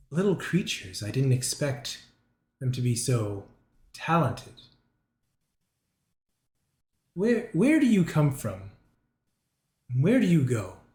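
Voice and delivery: ominous, foreboding voice. The narrator voices a voice reaching out as the listeners reach the top chamber; ominous voice. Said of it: "this ominous voice".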